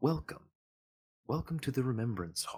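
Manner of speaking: fairly silky, smooth male voice. A game narrator voicing a golden hologram greeting an arriving player: fairly smooth male voice. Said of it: "says in a in a fairly smooth um, male voice".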